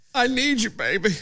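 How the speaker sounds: fake pleading, lovesick tone. Reading out a speech line as a bad love letter: mock pleading love letter. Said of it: "sounds like a really bad love story, like a love letter".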